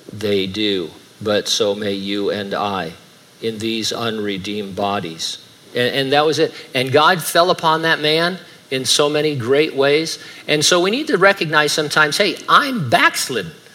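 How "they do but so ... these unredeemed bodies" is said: flat, dull monotone with no inflection. Acting out how a preacher just read his text without making it exciting, monotone reading. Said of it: "He had a monotone".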